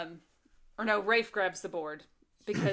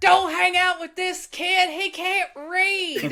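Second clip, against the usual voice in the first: wild, loud, high hobo-like scream, drawn out; 11 semitones higher, 11 dB louder than usual. Retelling a movie scene where the father screams at the boys: imitating someone screaming. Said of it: "And he screams".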